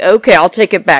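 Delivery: play-acted, loud, combative, confrontational and aggressive. Retelling a heated exchange between two people: imitating an aggressive retort. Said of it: "saying it in an aggressive way".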